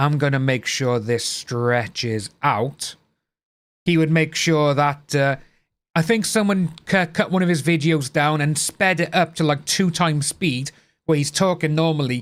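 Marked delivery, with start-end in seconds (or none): 0.0-3.0 low, mocking voice, every word stretched out long. Speaker mocks a video creator who padded his videos, stretching out the words. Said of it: "he didn't stretch out his talking like".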